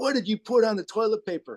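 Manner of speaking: put-on, enraged, high, furious screaming. Retelling being woken up by someone screaming at them, retelling a furious scream. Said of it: "starts screaming at me".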